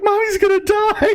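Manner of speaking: put-on crying kids. Voicing children in a tabletop game scene: children crying. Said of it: "all the kids immediately start crying".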